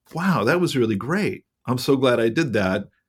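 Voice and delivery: plain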